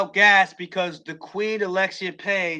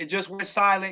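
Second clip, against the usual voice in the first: normal talking voice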